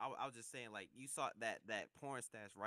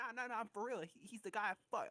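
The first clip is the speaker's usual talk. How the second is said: put-on high, raised girl tone; 12 semitones higher, 5 dB louder than usual. Retelling what a girl told the speaker about a man, imitating her tone. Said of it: "why you saying it in that tone like her".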